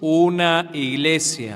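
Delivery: each word drawn out. Asked again to say it more slowly, the speaker repeats the answer: even more slowly. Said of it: "más despacio".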